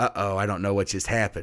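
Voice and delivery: ordinary talk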